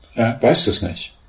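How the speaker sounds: plain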